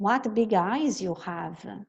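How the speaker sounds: ordinary talk, nothing marked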